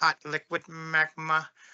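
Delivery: movie supervillain voice, scheming, savoring each word. While discussing the Hollow Earth theory, drop into a Dr. Evil voice. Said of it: "I had to say it like Doctor Evil".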